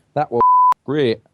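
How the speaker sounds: very loud, half-London, half-Manchester accent. Imagining Lee Dixon eating a chicken balti: semi-London semi-Mancunian Lee Dixon voice. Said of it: "semi-London, semi-Mancunian voice going".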